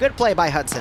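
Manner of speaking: normal talking voice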